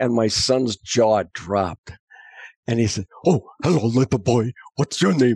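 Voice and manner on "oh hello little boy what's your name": put-on puppet monster voice. Retelling a puppet greeting a little boy: Cookie Monster voice. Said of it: "he came out with the Cookie Monster".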